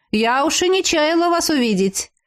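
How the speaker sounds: sarcastic drawn-out tone. She greets two latecomers frozen in the doorway, in a snide drawl. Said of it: "ехидно протянула".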